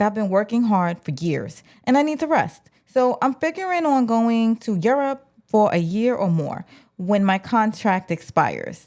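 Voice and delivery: ordinary talk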